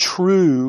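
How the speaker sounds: leaning hard on the word true. Quoting the prayer in John 17:3 to listeners, emphasis on true. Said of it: "emphasis on true".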